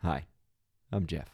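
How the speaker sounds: calm, soothing narrator voice. Answering with a turn at the same impression: Jeff impression. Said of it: "What's yours?".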